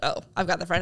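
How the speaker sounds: ordinary delivery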